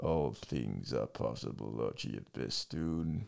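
very low, slow, soft rumbling voice. Retelling a story where a voice answers Archie's disbelief, deep rumbling Palpatine voice. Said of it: "like the deep rumble".

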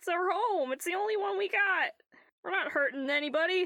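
very high, scared, pleading creature voice. Game master voicing a frightened kobold who speaks up to the players, scared pleading. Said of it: "The other kobolds are actually pretty damn scared right now. And one of them speaks up. You can't do this to us".

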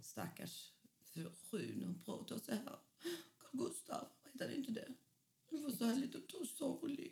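put-on mournful whisper, barely voiced. Talking about an actress with a friend, doing a mock-sad Sylvia imitation. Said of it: "Nu låter du som en ledsen Sylvia".

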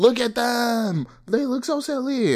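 very high, stretched-out, drawn-out teasing shout. Retelling yelling jokes to a friend at a concert: imitating own past yelling. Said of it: "I was just yelling".

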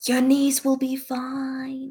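gentle, soft, slow half-whisper, stretching out "fine". Voicing a healer casting a spell on a friend: half-whispering. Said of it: "kind of whispers and goes".

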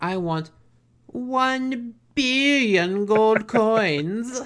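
very slow and high, with "one" drawn out. Quoting a character who wants more money: Doctor Evil voice. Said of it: "straight up, like, Doctor Evil".

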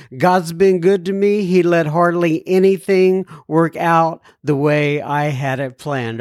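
ordinary talk, nothing marked

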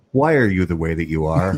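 put-on deadpan character voice. Retelling a scene from The Office, imitating a deadpan Michael Scott line. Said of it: "just with this deadpan look on his face says".

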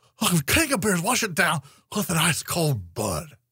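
high announcer delivery, pitch swooping up and around. Plug Budweiser on the podcast, doing Will Ferrell's Harry Caray impression. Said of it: "Will Ferrell's Harry Carey impression".

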